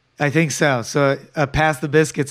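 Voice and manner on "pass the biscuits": ordinary talk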